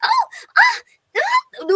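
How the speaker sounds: high, loud effort cries and grunts.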